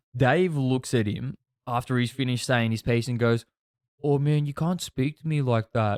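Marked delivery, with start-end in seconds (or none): 4.1-6.0 dejected, defeated, depressed, mopey tone. Retelling a car argument, the speaker quotes Dave's reply, imitating Dave's depressed tone. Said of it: "in like a real depressed tone".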